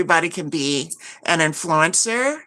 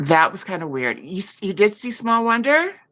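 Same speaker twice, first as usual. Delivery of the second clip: ordinary delivery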